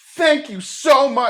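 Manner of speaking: very high-pitched, thoroughly sarcastic delivery. Retelling what the people behind her said as they left, mock-sarcastic thank-you. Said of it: "like all sarcastic".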